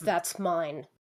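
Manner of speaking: snarling. Narrating a game for the players, [name] snarls a claim at them: snarling. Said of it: "snarls and says".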